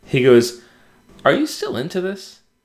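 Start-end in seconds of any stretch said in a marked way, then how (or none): 1.2-2.4 put-on very high, small, wary and hesitant voice. Retelling what Chris asked after a trailer: imitating a hesitant question. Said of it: "hesitant, like he didn't want me to be angry".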